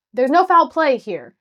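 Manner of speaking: loud, insistent, high-pitched. Retelling a man explaining why they take pictures, retelling him saying it loudly. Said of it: "he says really loudly".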